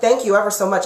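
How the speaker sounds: ordinary talk, nothing marked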